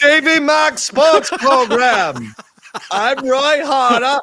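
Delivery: addled, put-on zombie voice, announcer style. Acting out a zombie introducing himself on a Halloween special; zombie voice. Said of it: "you sound like the zombie".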